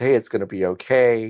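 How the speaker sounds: ordinary talk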